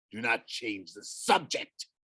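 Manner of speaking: ghostly growl, as if from beyond. Narrating a ghost's reply to a question, growling ghost voice. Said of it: "the ghost growled".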